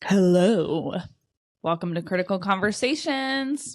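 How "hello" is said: fake deep manly voice, louder. Opening the podcast with a silly greeting: put-on deep manly voice. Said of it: "that one, um, deep, manly, like, "Hello" voice".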